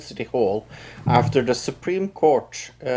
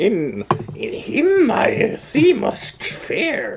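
put-on old alien voice, higher; 12 semitones higher than usual. Talking about the movies, doing a Yoda impression. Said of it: "That was not a bad Yoda".

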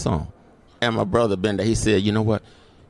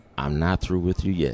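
gentle, soft-spoken, low voice; 4 semitones lower, 4 dB quieter than usual. Retelling what was heard in a dark hospital room: imitating a real soft voice. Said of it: "a real soft voice saying".

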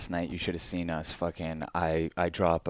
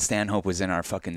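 ordinary talk, nothing marked

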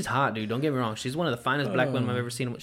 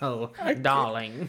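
cartoon dad character voice. Doing the dad from the Wild Thornberries: Nigel Thornberry voice. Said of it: "You remember the dad from the Wild Thornberries?".

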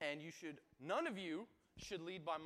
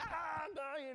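put-on very high screaming cry; 12 semitones higher, 4 dB louder than usual. Retelling being pinned by a car door between two cars, retelling a scream. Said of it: "I'm screaming".

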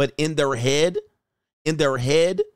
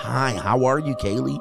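mock condescending, talking-down tone. Acting out how people greet a girl named Kaylee, imitating talking down to a kid. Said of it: "You be talking down to her like a kid".

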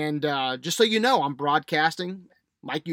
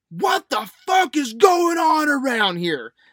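very high, shrieking, drawn-out, loud scream; 9 semitones higher, 7 dB louder than usual. Speaker retells his father-in-law arriving in the kitchen: imitating Gramps screaming. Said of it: "he screams".

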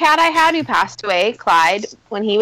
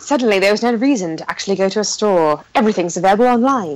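put-on documentary voiceover narrator voice. Doing a mock documentary voiceover about the birth of internet porn: documentary voiceover impression. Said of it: "that's a pretty good impression".

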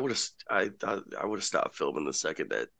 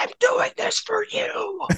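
very high, unhinged yelling. Joking about the film shoot, imitating Mel Gibson yelling at the sky. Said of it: "unhinged Mel Gibson is just yelling at the sky".

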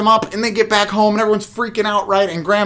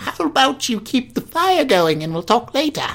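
exaggerated British old-lady voice, swooping pitch; 3 semitones higher than usual. Trying an impression of the granny in the story; over-the-top british old lady. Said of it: "That was too British, and it was way too over the top".

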